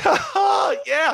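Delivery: high, laughing cheering shout. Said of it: "see me just laughing".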